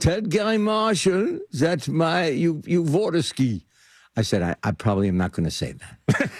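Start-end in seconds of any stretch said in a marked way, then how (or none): 0.0-3.6 high, put-on German accent. Recalling what the speaker's father told them, put-on german accent. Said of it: "My short German father said to me".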